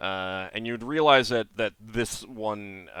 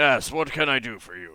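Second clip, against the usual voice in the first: very loud, booming giant's voice; 3 semitones higher, 4 dB louder than usual. A Fomorian looks down at a hobgoblin who just walked in; very loud Fomorian voice. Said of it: "In a very loud ... voice".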